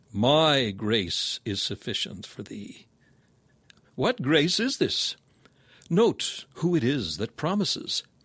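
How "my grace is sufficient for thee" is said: strong stress placed on the word my. Rereading the text from the authorized version, stress on my. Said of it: "throwing the stress on the first word".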